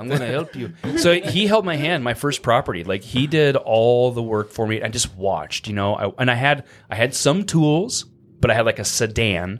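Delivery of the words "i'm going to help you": put-on Spanish accent. Quoting a mentor who offered help fixing up a house: spanish accent. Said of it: "He put on his Spanish accent".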